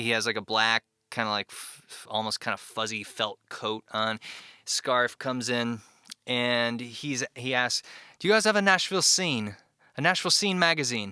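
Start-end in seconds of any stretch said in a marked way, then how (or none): 8.2-11.1 put-on British accent, quick and pitched up. Retelling what an older man who came in asked, in a British accent. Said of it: "British accent".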